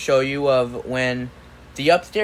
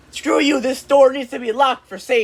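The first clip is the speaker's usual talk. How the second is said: very high, acted-out, shouted yell; 11 semitones higher, 3 dB louder than usual. Speaker retelling a fight over the basement door, quoting mom: retelling mom yelling back. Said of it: "she yelled back at him".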